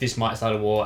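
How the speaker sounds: usual speaking voice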